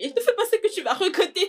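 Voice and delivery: high, imploring, pleading, begging tone. Begging a partner not to do something regrettable: begging. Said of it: "je t'en supplie".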